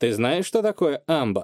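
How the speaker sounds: ordinary delivery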